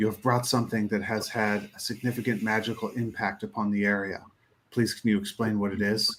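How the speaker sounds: grave, solemn, weighty, very serious, low and quiet. Diamondback goes directly to Yoshka and speaks to them in a very serious voice. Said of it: "say in a very serious voice".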